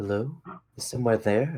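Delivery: soft, gentle feminine voice. Voicing a voice heard in the players' minds: soft feminine voice. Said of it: "you will hear a soft feminine voice".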